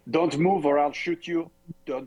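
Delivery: very bad, high-pitched, put-on French accent. In a tabletop game, the speaker voices a character calling to a construct, bad French accent. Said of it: "That's my that's my worst accent I've ever".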